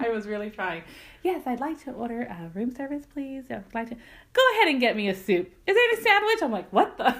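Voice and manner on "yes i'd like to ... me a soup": acted, put-on whispering voice. Retelling ordering room service by phone while someone naps, retelling her whisper.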